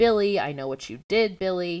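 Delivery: ordinary delivery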